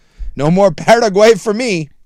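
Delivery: Paraguay with trilled R. Joking about missing the Paraguay match: Jason Swigard impression, rolled R. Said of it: "my Jason Swigard".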